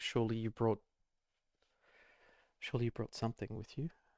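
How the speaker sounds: rushed, near-panicked delivery with repeated words. Game narrator voicing a character who starts to panic; almost panicking. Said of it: "she starts almost panicking".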